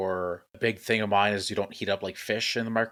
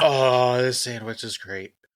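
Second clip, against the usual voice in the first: put-on sweet-talking voice, higher and louder; 3 semitones higher, 5 dB louder than usual. Imitating Mike sweet-talking his lunch at the office: imitating Mike sweet-talking his sandwich. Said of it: "he just goes".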